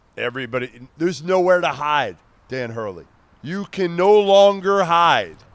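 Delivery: high, loud, full-on shouting. Calling out someone who hasn't played tough early games: yelling. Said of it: "Why are you yelling at me?".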